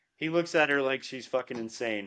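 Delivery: plain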